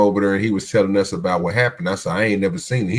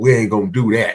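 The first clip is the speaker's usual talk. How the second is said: talking like a New Yorker. Retelling what A M said to the A I: imitating A M's New York accent. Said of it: "A M be talking with his New York accent".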